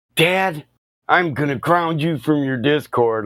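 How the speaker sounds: angry scolding tone, high pitched. Retelling his daughter's threat to ground him: imitating his mad daughter. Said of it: "she gets so mad".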